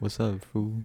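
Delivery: relaxed, easygoing, laid-back cartoon dog voice. Voicing the dog one would own: chill dog voice. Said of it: "Just a chill ass dog".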